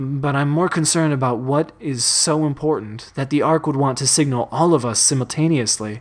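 ordinary delivery

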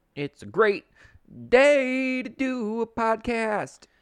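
loud, slow, high, drawn-out Southern drawl. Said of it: "a little [name] right there for you".

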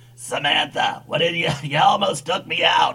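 low-key sultry voice, soft and seductive. Imagining a celebrity reacting to being nearly knocked over: sultry Kathleen Turner voice. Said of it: "she's got that sultry voice".

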